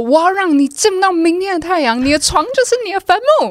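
threatening high-pitched shout. Retelling what he shouted at her classroom door, imitating a threatening yell. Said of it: "他就会在门口大喊说".

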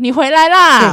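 cheerful, laughing delivery. Retelling how her mom greeted her: imitating a hearty laughing greeting. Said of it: "我妈还故意用那种很爽朗的笑声说".

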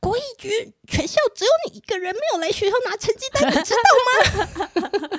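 very high-pitched, loud shouting. Speaker retells what the homeroom teacher yelled on the phone: retelling a teacher's shout. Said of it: "我班导就在电话里大喊".

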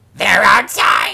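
rough, rasping, crazy witch voice. Reading a story aloud, voicing the tiny dragon's line like a crazy witch. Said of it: "That sounds like a crazy witch".

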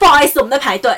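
speaking up loudly. Retelling telling a queue-jumper that people are waiting in line: retelling saying it loudly. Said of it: "我就很大声说".

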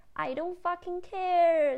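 very high, loud, fierce shouted outburst. Recounting an overheard mother yelling at her daughter, imitating a mother's loud yell. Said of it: "大吼吼了一句非常非常非常大声".

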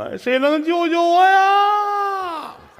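put-on tearful, fake weeping voice. Acting out a weeping mr. yu lamenting his life: mock crying as mr. yu. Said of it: "于老师眼泪下来了".

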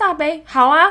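high, loud, eager chirp.

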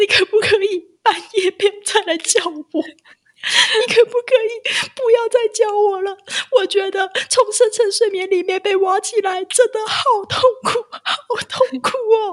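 put-on very high, loud, tearful sobbing begging. Retelling what the speaker said the next morning after being woken at night, sobbing plea. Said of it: "我就对着老黄就是开始痛哭，就说".

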